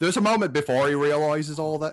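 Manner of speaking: put-on Australian-sounding accent. Retelling a movie scene to a co-host, slipping into a put-on Australian-sounding accent. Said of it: "it sounded more Australian to me".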